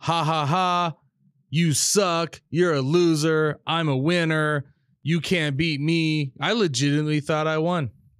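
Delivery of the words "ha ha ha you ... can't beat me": put-on, slow, gloating, jeering taunt with laughter. Recalling beating his dad as a kid, the speaker is retelling taunting laughter. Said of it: "I laughed at him".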